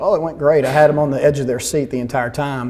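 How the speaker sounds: ordinary talk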